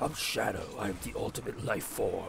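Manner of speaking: very quiet, hushed, over-the-top edgy delivery. Discussing who should voice Shadow, the speaker mocks one: over-the-top edgy Shadow voice. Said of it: "some edgy voice actor".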